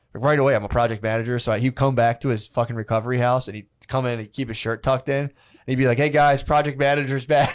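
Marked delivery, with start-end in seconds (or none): 5.9-7.5 bossy, puffed-up, self-important, strutting delivery. Retelling how a friend came home and started bossing people: imitating Bert bossing people around. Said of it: "He started bossing around people".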